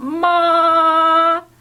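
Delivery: ma in high, flat, level tone, held long. Teaching the first tone to learners: high, level, long ma. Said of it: "일성은 이렇게 해요. 그러니까 길어요".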